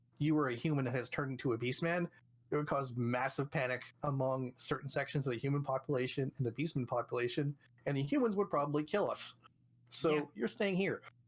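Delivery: ordinary talk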